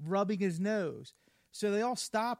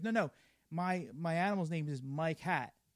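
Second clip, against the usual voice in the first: usual speaking voice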